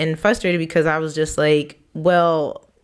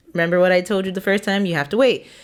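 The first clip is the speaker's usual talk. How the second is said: ordinary talk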